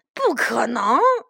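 ordinary delivery, nothing marked

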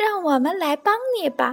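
tiny, thin, small, high voice. Grass seeds on the ground offer to help the little snail: thin, small voice. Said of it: "地上传来一阵细细的声音".

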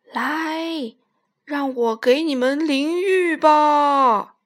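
resonant, ringing, booming, loud whale voice. Reading a story aloud, a big whale speaks in a booming, resonant voice. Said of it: "响起了一个洪亮的声音".

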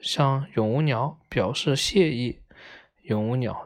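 ordinary delivery

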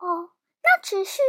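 ordinary delivery

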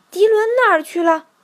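astonished. The mother duck, counting her ducklings, finds one missing and speaks surprised. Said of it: "他惊讶地挥起翅膀说".

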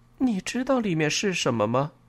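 somewhat unsettled, uneasy tone. Reading a story, the narrator questions Lisa about the parcel she handed over, asking uneasily. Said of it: "我有些不安的问".

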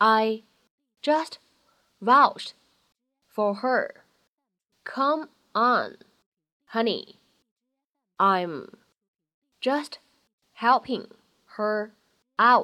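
very slow reading, one word at a time.

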